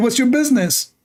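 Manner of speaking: put-on Saudi-accented voice. Retelling what a man said to him, in a Saudi accent. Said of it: "in the you know in Saudi accent".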